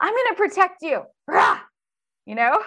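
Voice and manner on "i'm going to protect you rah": put-on, very high, swooping, angry battle cry. Voicing anger as a character stepping in to protect: acting out anger, protective. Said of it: "then anger comes in and goes".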